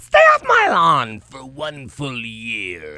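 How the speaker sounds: booming voice leaping high, then very low, very loud. Recalling a man from the past, imitating his voice going high then very low. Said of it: "its voice went high, and it went very low".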